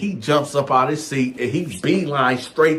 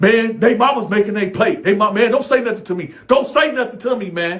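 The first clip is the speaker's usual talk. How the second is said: hostile, aggressive, pitched-up delivery; 7 semitones higher, 4 dB louder than usual. Retelling a sharp reply when told to wait for the kids: imitating an aggressive retort. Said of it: "Said it with so much aggression".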